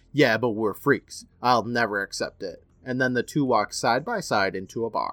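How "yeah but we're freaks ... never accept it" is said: ordinary talk, nothing marked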